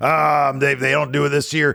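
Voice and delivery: stumbling, halting speech. Imitating people writing in the comments: impression of commenters. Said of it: "great impression of people writing comments".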